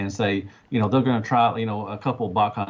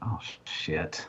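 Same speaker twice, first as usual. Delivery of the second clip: much softer, slow, hushed, dismayed curse. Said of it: "and I was like".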